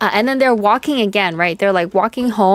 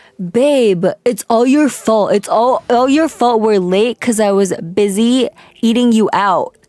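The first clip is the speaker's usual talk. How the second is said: normal talking voice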